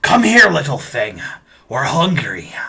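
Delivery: rough, loud, gruff dwarf voice. Game narrator voicing dwarves the players hear up ahead, gruff dwarf voices. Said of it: "some gruff voices up ahead".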